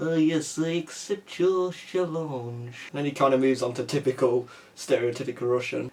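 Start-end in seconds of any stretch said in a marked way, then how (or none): 0.0-2.7 slow, put-on French accent. Describing a film villain who switches accents, doing an Inspector Clouseau French accent. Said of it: "sounds like Inspector Jacques Clouseau".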